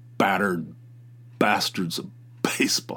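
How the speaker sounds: hard hit on every initial B sound. Saying a Netflix title's alliteration out loud, with hard stress on each B. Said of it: "You have to hit the B, the alliteration".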